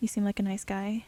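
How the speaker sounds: usual speaking voice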